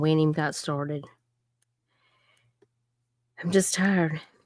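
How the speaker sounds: emotional, choked-up voice, fighting back tears. Starting a live stream and reading comments, emotional, close to tears. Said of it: "I'm getting all emotional".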